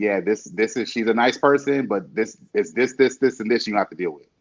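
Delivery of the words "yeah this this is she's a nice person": ordinary delivery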